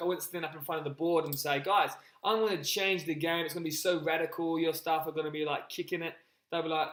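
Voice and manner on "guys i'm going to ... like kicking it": ordinary delivery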